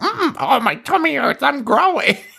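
very high, absurd squirrel voice. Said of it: "come back to the squirrel who's like".

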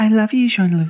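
put-on female American accent. Podcast host signing off an episode, in a random female american accent. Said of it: "Who are you impersonating?".

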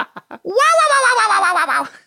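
very high, squeaky, wildly swooping voice. Giving a tip about doing voices in bed, the speaker demos Toad falling down a hill. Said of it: "sound like Toad falling down a hill on Mario Kart".

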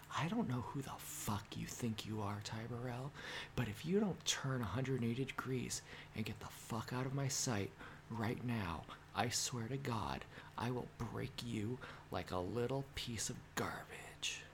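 very quiet, soft whisper. Acting out a made-up threat, forehead to forehead: put-on soft whisper. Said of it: "I would whisper just so softly that only he could hear me".

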